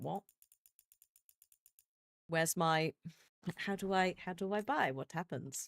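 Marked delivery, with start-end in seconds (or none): none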